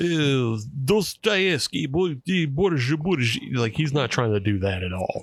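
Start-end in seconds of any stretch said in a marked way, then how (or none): 0.0-3.4 Ukrainian steppe-style accent. Showing the accent the actor does not attempt: mock Cossack accent. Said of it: "he is definitely not trying to put on".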